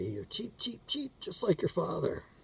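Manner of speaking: birdlike, chirpy, cheeping nagging tone. Imitating the speaker's mother as she would say it: cheeping bird voice. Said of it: "she would sound like a cheeping bird".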